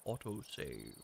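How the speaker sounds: soft, hushed voice like a giant robot. Player announcing a game autosave: Optimus Prime voice. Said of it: "If I say it in the Optimus Prime voice".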